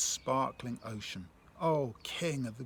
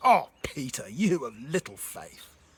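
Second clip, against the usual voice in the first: loud, slow, angry scolding tone; 5 dB louder than usual. Showing one way to hear a Bible line, in a mock-angry tone. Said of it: "Do you hear an angry Jesus?".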